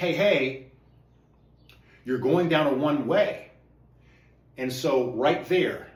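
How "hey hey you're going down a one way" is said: mock yelling, louder. Breaking down his own video for viewers, re-enacting a yell. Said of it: "So I'm yelling and I'm saying".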